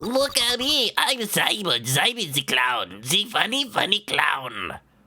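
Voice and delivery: put-on German accent. Mocking someone by impersonating Franziska with a German accent. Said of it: "that's a German accent".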